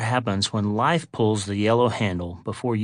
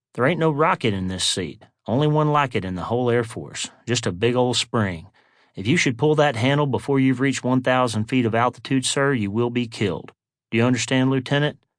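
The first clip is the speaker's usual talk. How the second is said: plain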